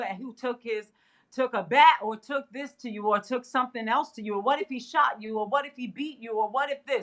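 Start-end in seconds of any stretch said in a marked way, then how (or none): none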